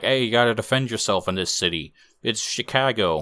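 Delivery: put-on, streetwise New York accent. Retelling the clown buddy's line from the movie, in a New York accent. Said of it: "I got a New York accent".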